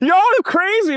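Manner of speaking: high, frantic, freaked-out blurted outburst. Telling a story about a guy's reaction, imitating him freaking out. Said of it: "He's freaking out so hard".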